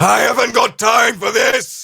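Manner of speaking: very high, rough, loud, creaky cartoon monkey captain voice. Voicing the captain just turned into a monkey: monkey captain voice. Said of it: "As he looks down himself".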